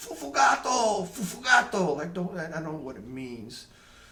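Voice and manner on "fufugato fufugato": high-pitched, slow yelling. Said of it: "he'd start yelling".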